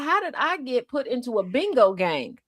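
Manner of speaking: plain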